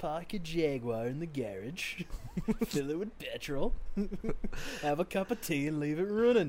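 put-on accent sliding from Australian into Scottish. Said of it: "You started becoming Aussie, and then you went Scottish".

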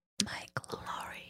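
soft whispering. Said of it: "Let's say it in, like, a-, A S M R".

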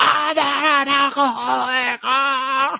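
very high shriek with a long, stretched "ah". Retelling the drunk passenger's reply: imitating someone shrieking. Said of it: "And she fucking s-, like".

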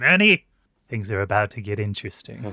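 sinister, understated, menacing delivery. Voicing a character who laughs over forbidden cookbooks: sinister and understated. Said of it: "So sinister. So understated".

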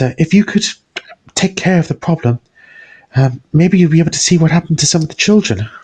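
put-on tipsy voice. The narrator speaks as Gorman while the ale takes hold, tipsy Gorman voice. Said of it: "the ale is really taking a hold".

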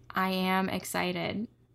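put-on flat, robot-like monotone voice. Retelling a spouse's reply: imitating robotic flat voice. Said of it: "like a robot".

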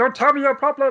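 weird, very high puppet voice. Speaker retells a man who picks up a ringing phone, weird Muppet voice. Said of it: "In his weird Muppet voice he suddenly has".

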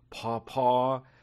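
put-on thick, dumb-sounding German accent. Describing the first scene, imitating the son in a thick, dumb German accent. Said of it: "a thick, dumb German accent".

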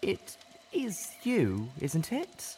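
choked, strangled high voice, close to breaking. A woman moves slowly closer to the narrator, speaking in a strangled voice. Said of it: "She intoned in a strangled voice".

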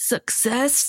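croaking, hoarse, hushed, breathy near whisper. Burned and sitting up, the narrator croaks a single word. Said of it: "I croaked".

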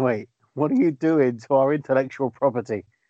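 plain

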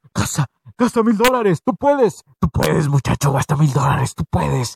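needy, groveling, coaxing voice. Acting out the inner voice that urges spending money: Gollum voice. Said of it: "la voz del Gollum".

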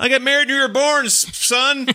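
very high put-on old man voice. Joking to a younger listener about their age: sounding like old man Johnson. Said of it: "Now you sound like old man Johnson".

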